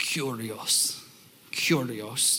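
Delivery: attempted Greek accent, hushed and breathy. Explaining the Greek word for Lord, saying it in a put-on Greek accent. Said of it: "I'll try to put on the accent".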